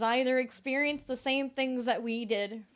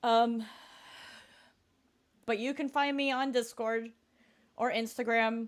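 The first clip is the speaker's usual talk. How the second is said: talking through held-back tears, pushing on. Streamer talking to viewers, trying not to cry. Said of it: "I'm still trying not to cry".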